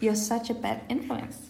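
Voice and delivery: ordinary talk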